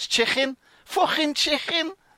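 put-on Liverpool accent. Showing how liverpool speakers say chicken: put-on scouse accent. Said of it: "Scouse, like, where they can't say a K".

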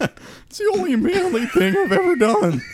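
very high voice, cracking mid-line. Repeating a line as an impression of Ian: cracking voice. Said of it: "That's my Ian impression".

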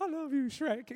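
proud high puffed-up voice. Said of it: "feeling all, like, proud".

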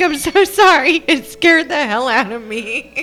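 high-pitched, words spilling through hard laughter. Retelling how someone who ditched the speaker apologized, imitating laughing hard. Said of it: "She's like laughing so hard".

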